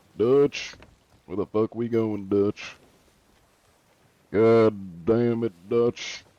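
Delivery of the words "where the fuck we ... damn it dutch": put-on drawling southern voice. Speaker showing off the accents he can do: Southern drawl. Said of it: "but the Southern drawl".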